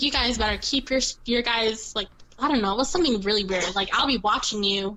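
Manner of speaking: plain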